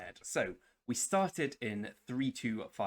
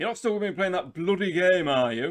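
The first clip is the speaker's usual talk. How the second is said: very loud, shrill dad voice; 8 semitones higher, 11 dB louder than usual. Quote your father questioning you about still playing a game, imitating father, not his real voice. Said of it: "He doesn't sound like that, but in this thing he does".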